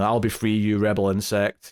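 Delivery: ordinary talk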